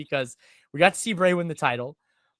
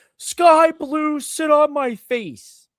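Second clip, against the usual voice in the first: put-on very high, very slow, drawn-out drunken holler; 10 semitones higher, 4 dB louder than usual. Retelling what two drunk guys at a show kept shouting: imitating drunk fans yelling. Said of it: "they kept yelling".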